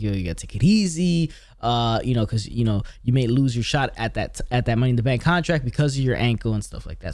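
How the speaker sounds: ordinary delivery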